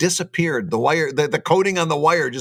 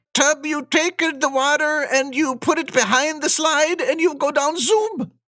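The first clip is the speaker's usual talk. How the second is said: very high put-on Swedish accent; 11 semitones higher than usual. Speaker trying out an accent for listeners: best Swedish accent. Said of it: "That's my best Swedish accent".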